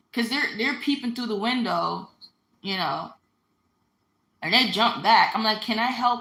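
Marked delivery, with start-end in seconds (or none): 5.7-6.3 put-on firm, very stern, confident, no-nonsense tone. Retelling speaking through the window to people peeping in: imitating a very stern, confident voice. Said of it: "Very stern, very confident".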